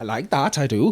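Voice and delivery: attempted put-on Welsh accent. During a quick lesson on the Welsh accent, repeating a phrase in put-on Welsh accent. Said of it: "course on the Welsh accent".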